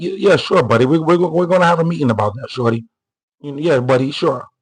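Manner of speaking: put-on condescending, placating, dismissive, patronizing tone. Imitating Democrats brushing off a request: mock dismissive Democrats. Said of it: "Democrats would be like".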